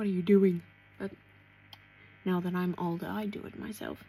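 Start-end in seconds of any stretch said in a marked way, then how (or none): 0.0-0.6 loud, teasing, mocking tone. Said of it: "make fun of my mother".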